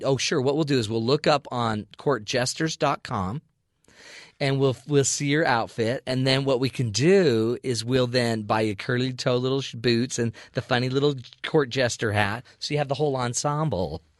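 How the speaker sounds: ordinary talk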